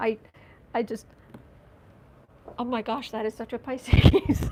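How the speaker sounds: loud, words broken up by laughter. Reacting to a description of a Pisces father, laughing while talking. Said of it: "I'm sorry, I'm laughing".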